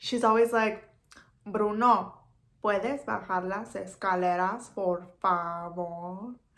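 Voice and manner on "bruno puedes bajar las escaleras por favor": very slow, unhurried delivery, "favor" stretched long. Doing a quick impression of an actress from Casa de las Flores: very slow speech. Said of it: "She just talks so slow".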